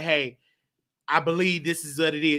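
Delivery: ordinary talk, nothing marked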